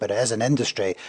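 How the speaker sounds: normal talking voice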